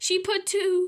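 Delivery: ordinary delivery, nothing marked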